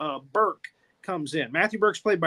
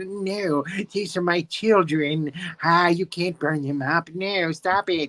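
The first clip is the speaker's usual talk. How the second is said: aghast, classic horror-movie star voice. Retelling a horror film scene, the sculptor begging: Vincent Price impression. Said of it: "So that's my Vincent Price impression".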